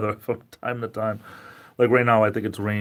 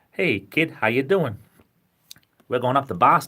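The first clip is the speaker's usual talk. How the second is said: accent of Western Massachusetts; 4 semitones higher than usual. Showing how people from Western Massachusetts talk: Western Massachusetts accent. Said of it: "Western Massachusetts talk like".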